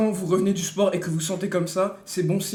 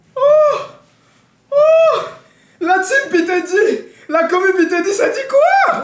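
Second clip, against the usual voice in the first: very loud, shrill, high, drawn-out shout; 12 dB louder than usual. Greeting the chat after coming back live: shouting. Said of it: "Arrête de crier !".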